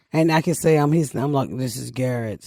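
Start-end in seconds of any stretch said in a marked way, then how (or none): 1.5-2.5 put-on man's voice. Retelling a phone call to the creditors, imitating garrett on phone. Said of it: "I can play like I'm".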